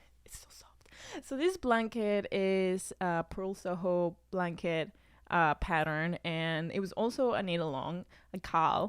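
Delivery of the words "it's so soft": soft, hushed, barely voiced whisper. Showing viewers a blanket, whispering softly.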